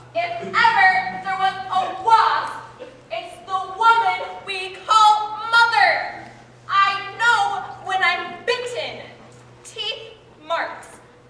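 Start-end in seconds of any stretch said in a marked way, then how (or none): 0.2-9.0 loud, raised voice. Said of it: "There is no need to raise your voice".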